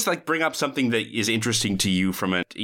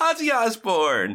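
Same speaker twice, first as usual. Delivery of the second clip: big-smiling, high, slow, beaming exclamation. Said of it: "with a very big smile".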